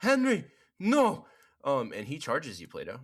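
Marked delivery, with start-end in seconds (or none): 0.0-1.2 shrieking yell, very loud and very high. Voicing the captain as his man is killed: yelling in character. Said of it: "who is going to yell out".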